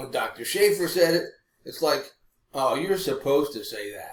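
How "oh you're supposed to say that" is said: ordinary talk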